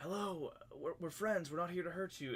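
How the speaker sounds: theatrical whisper. A tabletop player's character calling out to a creature, stage whisper. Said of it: "sort of like stage whisper".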